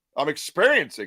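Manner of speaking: ordinary talk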